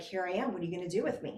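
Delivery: wry, dry, kind-of-sarcastic tone. Retelling standing under the sun, speaking to a voice: retelling own sarcastic words. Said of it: "Being kind of sarcastic".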